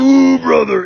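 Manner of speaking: very loud, very high, belted wrestler cry. Retelling what he heard a man say, the speaker does a Macho Man Randy Savage impression. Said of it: "It sounded just like Macho Man".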